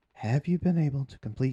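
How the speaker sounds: plain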